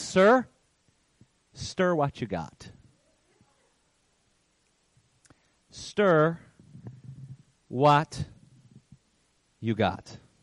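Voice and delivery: play-acted firm, insistent voice with no give. Retelling how a woman answers a man about to protest, acting out a firm voice. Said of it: "says in a firm voice".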